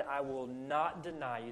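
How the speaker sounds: ordinary delivery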